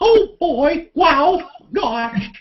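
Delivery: very high, slow, squeaky falsetto. Answering a chat question asking for it: falsetto Mickey Mouse voice. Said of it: "if you do that falsetto".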